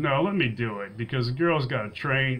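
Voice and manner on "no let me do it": ordinary talk, nothing marked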